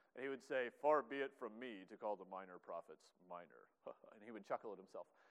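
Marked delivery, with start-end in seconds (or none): 0.9-3.7 big, deep, low put-on professor voice. Recalling an undergrad professor's Bible joke, speaker imitates his big deep voice. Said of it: "he had this big, deep voice".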